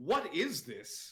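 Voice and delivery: high, very loud, booming shout. Playing a character who bites a bad melon and shouts toward Torga: shouting in character. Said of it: "turn and sort of shout over towards".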